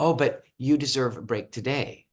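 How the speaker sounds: ordinary delivery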